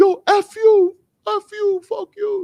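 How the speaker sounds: shrill, very high, very slow, drawn-out screaming. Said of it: "screaming across the street".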